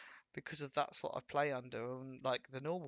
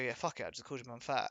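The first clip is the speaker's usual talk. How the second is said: ordinary talk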